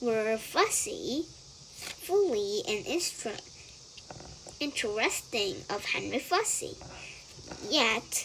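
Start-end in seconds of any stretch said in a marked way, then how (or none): none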